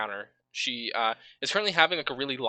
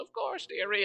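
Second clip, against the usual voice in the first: put-on sweet, high, kindly little-old-lady voice; 7 semitones higher, 4 dB quieter than usual. Voicing a customer who answers the shopkeeper: kindly older woman voice. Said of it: "the kindly older woman, like, nods and goes".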